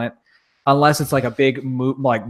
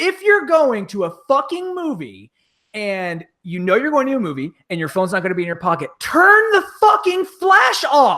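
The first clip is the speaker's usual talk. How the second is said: furious, very high, rising shouted rant; 11 semitones higher than usual. Retelling what he yelled near the theater while walking with his wife, retelling a yell. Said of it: "okay, this is where I'm yelling".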